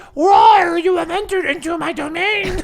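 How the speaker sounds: very high-pitched little talking-toy voice. Narrating a cave scene to Andy, voicing the vampire in a Furby voice. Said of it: "That was my Furby voice".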